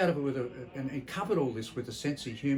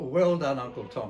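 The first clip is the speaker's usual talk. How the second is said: ordinary delivery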